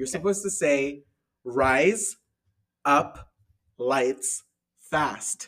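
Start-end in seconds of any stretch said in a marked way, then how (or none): 1.4-5.5 very slow, carefully spaced, word-by-word. Demonstrating a phrase for the listener to repeat, said slowly. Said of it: "I'm going to say it slowly".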